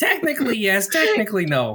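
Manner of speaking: high-pitched comic voice swooping up and down. Playing Small Oswald in a dream scene, in a Gilbert Gottfried-like voice. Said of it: "Why do you sound like Gilbert Gottfried?".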